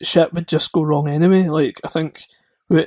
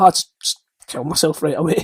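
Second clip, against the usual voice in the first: ordinary delivery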